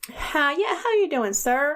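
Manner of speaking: put-on Southern American accent. Speaker admits being bad at accents, then tries a put-on southern accent. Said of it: "Kyle develops a southern accent when he's on the phone".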